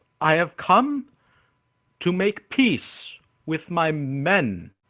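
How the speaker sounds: slow, drawn-out final "men". A player's character stands up before confused strangers, drawing out 'men' slowly. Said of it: "he just says that last bit really slowly".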